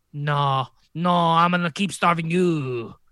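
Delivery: exaggerated French accent. Answering the starving people as the bourgeoisie: stereotypical French accent. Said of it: "There's my stereotypical French voice".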